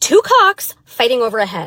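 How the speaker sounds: heavy stress landing on cocks. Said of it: "Emphasis on cocks".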